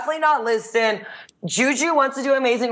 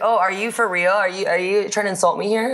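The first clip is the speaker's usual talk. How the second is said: ordinary delivery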